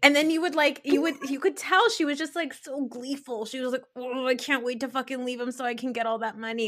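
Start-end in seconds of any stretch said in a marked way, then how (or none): none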